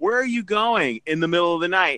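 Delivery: ordinary talk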